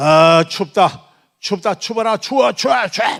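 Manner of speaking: high, loud shout in a possessed voice.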